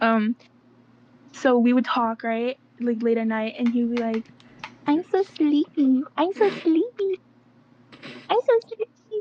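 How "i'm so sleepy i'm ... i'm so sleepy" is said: put-on high, slow, drawn-out babyish voice. Recalling late-night talks, the speaker imitates him in a high-pitched baby voice. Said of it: "use this high pitched baby voice".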